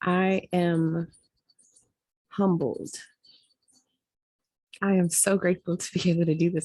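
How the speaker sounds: holding back tears, on the verge of crying. Humbled and grateful, you are about to end your talk, trying not to cry. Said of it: "I'm trying not to cry right now".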